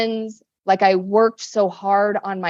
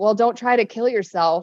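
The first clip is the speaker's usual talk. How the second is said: put-on sarcastic, joking tone. Retelling a friend's reply on the phone: imitating Kahea's sarcastic joking. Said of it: "just really sarcastically and jokingly".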